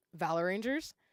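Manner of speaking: ordinary talk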